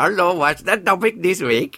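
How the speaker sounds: high-pitched, slow cartoon-character voice. Asking the other speaker the week's topic in a slightly racist way: Apu voice. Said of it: "you were being Apu".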